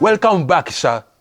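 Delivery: put-on South African accent. Acting out a mall security guard greeting a shopper: South African accent. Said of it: "speaking with South African accent".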